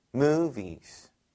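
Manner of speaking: stress on mo- of movies. English lesson on saying I enjoy watching movies: stress on first syllable of movies. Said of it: "V가 강세가 아니라 무 할 때, 으 할 때 올리시라고".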